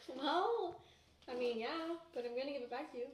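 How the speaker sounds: high, tearful voice, talking through tears. Answering the person paying off their school and bills, crying. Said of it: "Are you really crying right now?".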